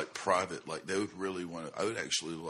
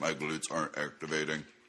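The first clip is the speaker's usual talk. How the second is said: mock robotic voice, lower pitched; 2 semitones lower than usual. Quoting what he said the way a PR man would: robotic PR-man voice. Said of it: "This is what PR man says".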